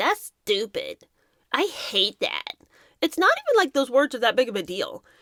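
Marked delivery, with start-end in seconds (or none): 0.0-2.5 put-on very slow, drawn-out little baby voice. Parent imitating their little child, in a little baby voice. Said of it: "when you hear a little baby voice go".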